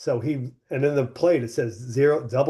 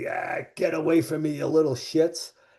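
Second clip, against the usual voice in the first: dismissive movie-character voice, brushing off; 3 semitones higher than usual. Retelling what an actor said to approaching kids: Robert Shaw voice. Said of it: "he sounded just like in the movie".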